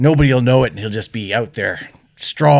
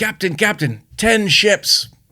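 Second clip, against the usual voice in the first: acted high-pitched yelling; 9 semitones higher than usual. Telling a joke, the lookout calls from the crow's nest: lookout yelling down. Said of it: "Lookout yells down".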